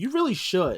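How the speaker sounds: put-on cheeky, blunt, sassy little-kid voice. A parent retells a daughter's remark, imitating a sassy little girl. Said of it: "in her sassy little way".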